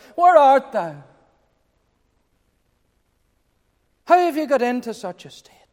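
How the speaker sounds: play-acted sorrowful cry. Voicing God calling out to Adam; put-on sorrowing voice. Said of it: "with that sorrowing voice".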